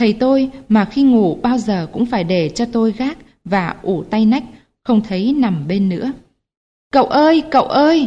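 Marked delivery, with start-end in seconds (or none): 6.9-8.1 high, drawn-out scream at top of lungs. The narrator calls out for their missing father, screaming at full lungs. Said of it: "Tiếng kêu gọi của tôi đã thành tiếng hét làm ráo phổi".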